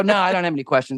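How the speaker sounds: short, curt, irritated, angry reply. Retelling a curt reply at an audition: retelling own angry curt reply. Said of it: "I read it, like, angry".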